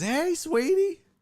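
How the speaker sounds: very high, sweet put-on Southern accent. Retelling a phone call, imitating a Southern woman's voice.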